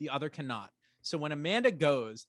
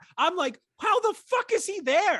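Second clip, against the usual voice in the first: all-out shriek, very high, very loud and shrill; 8 dB louder than usual. Recounting a show's plot to the other speaker, screaming. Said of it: "I'm screaming again".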